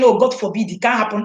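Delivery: normal talking voice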